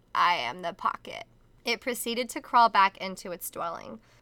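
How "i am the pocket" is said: soft raspy voice, slower. Reading a horror story aloud, voicing the masked thing's line in a soft, raspy voice. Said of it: "it spoke in a soft, raspy voice".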